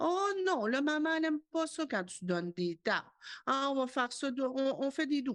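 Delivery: excessively gentle, syrupy, overly sweet, high coaxing voice. A parent demonstrating an excessively gentle way to correct a child, overly sweet soft voice. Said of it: "l'espèce de douceur excessive".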